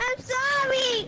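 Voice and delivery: speaking through tears. Apologizing for misbehaving after a warning about police: crying while apologizing. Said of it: "he's crying".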